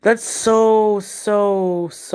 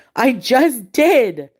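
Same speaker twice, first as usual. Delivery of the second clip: freaked-out, high-pitched talking back; 6 semitones higher, 4 dB louder than usual. Retelling own reply when told to go clean: imitating own freaked-out reply. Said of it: "I freaked out".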